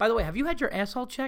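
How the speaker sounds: earnest worried tone. Showing how to ask a question while leaning in: concerned tone. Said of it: "He said it like a concerned".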